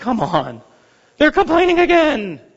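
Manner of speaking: put-on tired, weary, worn-out, exhausted old man voice. Imitating Moses telling God the people complain again: tired Moses voice. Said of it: "he's so tired".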